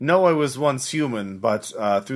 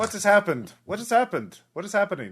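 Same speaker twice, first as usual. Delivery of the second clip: put-on digitized, robotic eighties-style Russian accent; 8 semitones higher than usual. The narrator voices a digitized voice heard at the far end, digitized Russian-accented voice. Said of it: "a voice speaking in Russian, a digitized".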